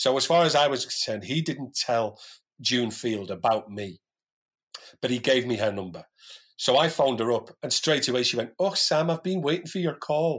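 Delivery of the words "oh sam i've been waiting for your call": put-on Dundee accent. Retelling a phone call, the speaker quotes the woman answering: June Field's Dundee accent. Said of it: "In this gorgeous little Dundee accent".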